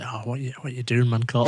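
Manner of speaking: plain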